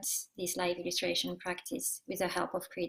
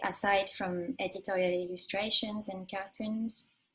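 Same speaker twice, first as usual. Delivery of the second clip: ordinary delivery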